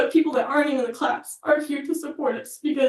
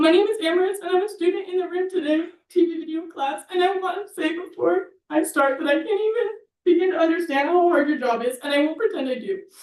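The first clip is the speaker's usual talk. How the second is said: tearful voice, crying while speaking; 3 semitones higher than usual. A student addressing board members, crying while talking. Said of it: "Oh my god, I'm already crying".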